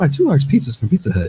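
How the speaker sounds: mock commercial pitchwoman, loud and bouncy.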